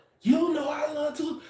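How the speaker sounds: play-acted upset, very high, angry outburst. Retelling a Valentine's Day example, imitating a partner going off. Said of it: "she go off on me".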